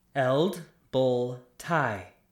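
slow, careful, each syllable set apart. Teaching a command word so its nuance is heard: slow, syllable by syllable. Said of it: "I will say the command word slowly, so you can hear the nuance of it".

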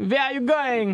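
comic fake French accent. Hosts talk about French reveals like the Pink Panther; fake French accent. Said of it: "I perfected the fake French accent".

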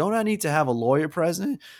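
heavy Southern drawl, laid on thick. Retelling a movie scene where a kid questions police: imitating a thick southern accent. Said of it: "with the biggest Southern accent".

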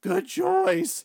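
high, loud, squeaky voice. Act out the teen replying to a customer's meal order, in a Squeaky-Voiced Teen voice. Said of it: "the squeaky voice teen's like".

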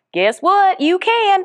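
Southern accent slipping in suddenly, very high. Speaker telling listeners about a favorite book, slipping into a Southern accent. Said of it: "I got really Southern all of a sudden".

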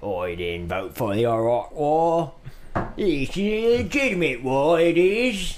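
put-on British Cockney accent. Asked by another speaker to do a Cockney accent, Cockney accent. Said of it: "You're gonna do a Cockney accent for that".

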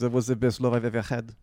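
sudden put-on French accent. Retelling the other speaker's hookup story, voicing the woman: put-on French accent. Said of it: "suddenly got a French accent".

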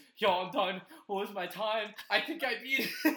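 put-on breathless, out-of-breath kid voice. Retelling how a soapy kid ran out asking his time: retelling kid out of breath. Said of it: "out of breath".

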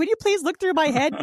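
very high, weepy, tearful crying and begging. Retelling asking someone to look through their hair, imitating a crying plea. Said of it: "So I start crying".

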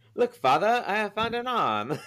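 very high-pitched, put-on old-English accent. Riffing on a crime story, a speaker plays a shakespearean robber in a mock shakespearean accent. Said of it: "I don't even know what accent that was".

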